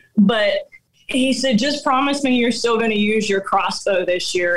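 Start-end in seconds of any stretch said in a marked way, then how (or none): none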